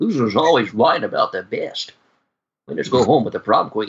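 very low, deep Scottish brogue. Doing an impression after being asked for a Sean Connery line: Sean Connery impression. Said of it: "Good Sean Connery impersonation".

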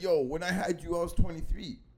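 ordinary talk, nothing marked

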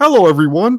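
deliberately bad frog puppet voice, high and loud. Retelling greeting everyone, done in the speaker's worst Kermit the Frog impression. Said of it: "in my worst Kermit the Frog impression".

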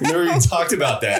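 high, fast, incredulous.

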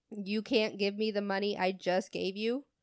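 ordinary talk

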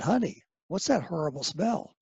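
put-on whispering. Retelling a question whispered to a wife at a party: retelling a whisper. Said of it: "I whispered to my wife".

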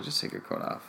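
exasperated, annoyed, breathy near-whisper. Retelling what they said to someone still wearing a coat: retelling an annoyed remark. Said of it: "I just got really annoyed".

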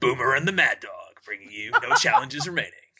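put-on, loud sports radio host announcer delivery. A podcast host proposes renaming the show sports-radio style, sports radio host voice. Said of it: "that's a really good voice".

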